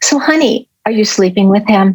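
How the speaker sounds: tender, sweet, motherly tone. Retelling a phone call where mom asked a question: imitating mom, quiet and sweet. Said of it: "my mom says to me quietly, but sweetly".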